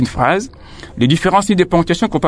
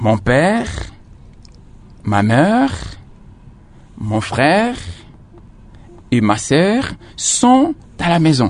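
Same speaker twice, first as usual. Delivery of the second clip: slow, with a brief pause after each name. Explaining commas in a list of family members, short pause after each family member. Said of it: "Et à chaque fois, je me repose".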